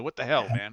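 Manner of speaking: put-on angry voice. Imagining the comic creator tracking them down to complain: angry Todd McFarlane impression. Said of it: "Todd McFarlane calling us up angrily".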